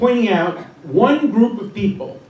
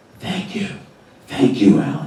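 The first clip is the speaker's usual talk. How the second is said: put-on whisper, pitched lower; 6 semitones lower than usual. Retelling phone calls of thanks from professors: imitating a whisper. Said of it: "in a whisper".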